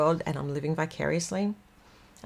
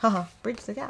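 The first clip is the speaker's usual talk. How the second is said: giggling, laughing through the words; 4 semitones higher than usual. Repeating the phrase just said, laughing while talking. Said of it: "I'm laughing 'cause there's".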